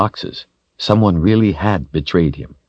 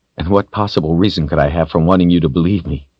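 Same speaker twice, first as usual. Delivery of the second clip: ordinary delivery, nothing marked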